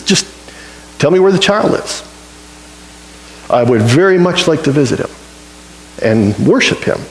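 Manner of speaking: normal talking voice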